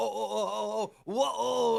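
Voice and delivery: put-on high, nasal, whiny small-child voice, drawn out. Imitating someone's whining on a call: imitating a little kid voice. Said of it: "doing the little fucking kid voice".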